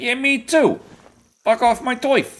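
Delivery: very high put-on Brooklyn accent, bear voice. Voicing a bear in a hunting game: voicing a bear with Brooklyn accent. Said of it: "Why you sound like you're from downtown, like, Brooklyn?".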